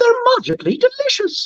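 very high-pitched cereal-mascot voice. Asked about playing Lucky from Lucky Charms, doing the Lucky voice. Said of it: "let's see if I can do it".

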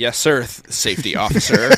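very loud, drawn-out, sing-song sarcastic voice. Recounting ignoring his safety warnings, speaker is retelling a sarcastic reply. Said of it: "I sarcastically say".

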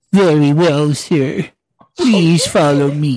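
whole line droops downward. Asked for Droopy, the speaker answers the guest in a Droopy voice. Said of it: "I can do droopy".

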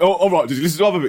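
fast, eager, worked-up, excited tone. Retelling how the other speaker asked about the dog: imitating someone excited. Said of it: "He's so excited".

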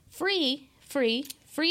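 free hammered with heavy stress each time. Reading a watch party announcement about a free ticket: stress on FREE. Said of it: "Thank you for the emphasis on that".

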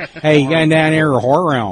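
put-on Pittsburgh accent. Showing how someone from Pittsburgh would say it: Pittsburgh accent. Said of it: "if it's Pittsburgh, you say".

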